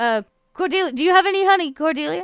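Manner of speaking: taunting shout. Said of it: "they kind of begin shouting, and they're almost like they're kind of making fun of you all".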